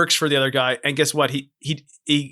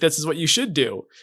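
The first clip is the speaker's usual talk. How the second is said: normal talking voice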